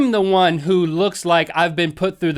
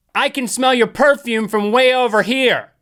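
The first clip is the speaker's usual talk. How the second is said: play-acted, toned-down, high, mild loud yell; 6 semitones higher than usual. Retelling what a woman in the aisle said to the speaker's wife, very loud voice. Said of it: "in a very loud voice".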